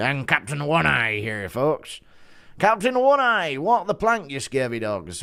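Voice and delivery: put-on pirate captain voice. Doing a Halloween impression for the audience, Bully Tom pirate impression. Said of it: "Impression of Bully Tom being a pirate for Halloween".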